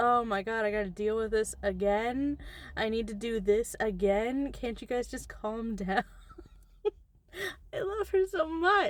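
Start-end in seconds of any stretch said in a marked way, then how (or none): 0.0-6.0 put-on exasperated, fed-up voice. Acting out a book character dealing with hauntings: imitating someone fed up. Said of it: "sometimes fed up".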